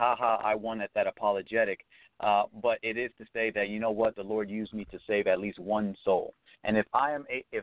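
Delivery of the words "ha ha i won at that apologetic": ordinary talk, nothing marked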